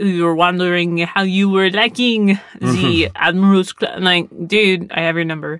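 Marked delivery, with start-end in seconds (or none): 0.0-4.0 really bad, clumsy put-on French accent. Retelling what someone said to Mr. T, in a really bad French accent. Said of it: "me doing a really bad French accent".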